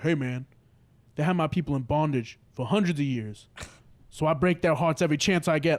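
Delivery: low, very deep male voice. Retelling what Tony answered when asked why, the speaker imitates Tony's deep voice. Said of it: "he had a hella deep voice".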